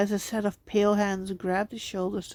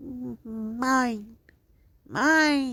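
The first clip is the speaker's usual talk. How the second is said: high, distorted, drawn-out creature croak from the throat; 4 semitones higher than usual. Reading a horror story, voicing the creature as it grabs Matt: high-pitched, distorted croak. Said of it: "a high-pitched, distorted voice croaked".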